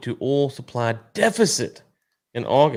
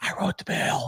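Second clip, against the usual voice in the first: quieter put-on creepy whisper; 8 dB quieter than usual. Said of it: "whispering into the microphone".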